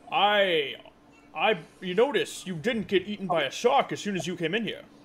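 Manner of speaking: dragon turtle creature voice. Voicing a giant dragon turtle who surprises a swimmer: giant dragon turtle voice. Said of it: "this giant dragon turtle goes".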